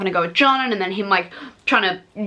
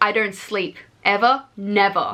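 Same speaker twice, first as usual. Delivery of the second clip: grand, slow, dramatic delivery, each word drawn out. Retelling a book character's line, imitating dramatic Trick. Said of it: "Back to dramatic Trick".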